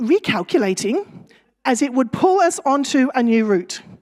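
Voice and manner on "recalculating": acted, slightly condescending sat-nav voice. Retelling taking a wrong turn while driving, imitating a condescending Google Maps voice. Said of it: "in a slightly condescending voice".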